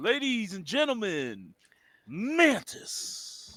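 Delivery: grand, high, swooping ring-announcer voice. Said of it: "and I'll be like".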